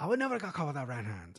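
put-on Irish accent. Quoting a fighter's interview remark in an irish accent. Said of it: "that Irish accent I just did right there".

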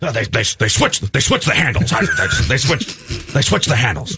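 fake gruff actor voice. Retelling an audio clip of Harrison Ford: Harrison Ford impression. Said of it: "your Harrison Ford impression".

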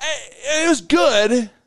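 put-on hesitant tone. Retelling answering someone who asked how the trip was: imitating a hesitant reply. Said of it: "There's some hesitation there".

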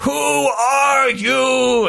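high, slow, creaky, drawn-out scream.

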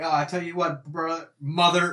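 slurred, saying "mother" in place of "brother". Retelling how the broadcaster said the wrong word, imitating slurred speech. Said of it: "he wanted to say brother".

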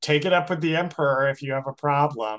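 mock-sarcastic put-on voice. Recapping a show episode, quoting the judge to Cassian, imitating a sarcastic judge. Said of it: "super sarcastically".

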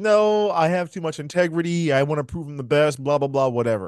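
ordinary delivery

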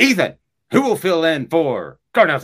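sudden, booming, very loud, swooping yell. Before getting to the news, show how he suddenly yells at you, in a yelling Larry King impression. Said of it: "my Larry King impression. He talks real quiet until he goes".

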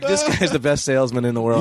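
ordinary talk, nothing marked

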